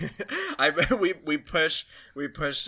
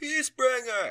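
very high-pitched, loud shout; 11 semitones higher than usual. Voicing someone in a crowd naming the horse: shouted from the back. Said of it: "Shouted from the back".

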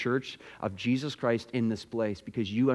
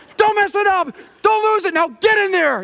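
put-on yell, higher and louder; 13 dB louder than usual. Retelling how the coach grabbed his face mask: imitating the coach yelling. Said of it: "he's literally yelling me".

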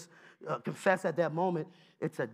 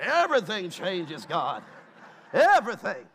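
loud, swooping, sing-song preacher cadence; 5 dB louder than usual.

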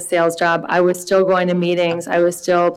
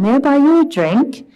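put-on standard British English accent; 8 semitones higher than usual. A guy walks up to the speaker sitting alone at a bar; perfect British BBC accent. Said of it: "he says in a perfect British BBC accent".

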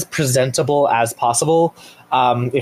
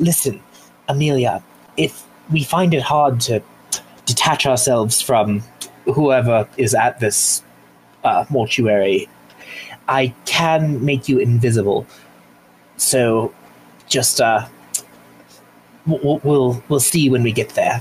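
very quiet, hushed, hard to overhear. A character leans to the group so another can't overhear, very quiet voice. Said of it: "in a very low voice".

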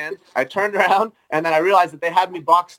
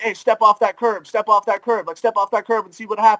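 mock screaming, much higher pitch; 3 semitones higher than usual. Speaker retelling a group in the street screaming at them, retelling people screaming. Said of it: "they were all screaming at me like".

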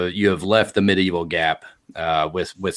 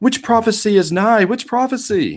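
very high, stretched, drawn-out yell; 14 semitones higher, 3 dB louder than usual. Voicing a crowd of villagers: crowd yelling in character. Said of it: "everybody's just yelling out".

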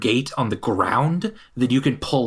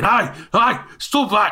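shouting voices, much higher and slower; 9 semitones higher than usual. Game master voicing the guards above shouting at the players, guards shouting. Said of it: "guards above kind of shouting".

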